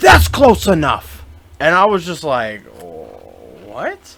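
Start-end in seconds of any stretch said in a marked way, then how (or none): 0.0-1.2 high, loud, shrieked scream. Retelling a woman at Walgreens screaming as the speaker picks something up, imitating a scream. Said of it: "she just screams".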